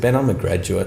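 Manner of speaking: ordinary delivery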